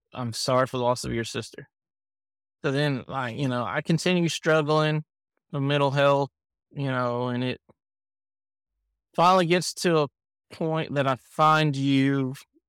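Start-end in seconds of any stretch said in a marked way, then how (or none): 0.1-1.6 cold, detached, flat, emotionless monotone. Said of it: "had no emotion in it".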